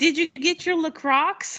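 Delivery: shrill, very high, carrying yell. Retelling calling down a store aisle to a friend's husband: imitating own yell. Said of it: "yelling it down the aisle".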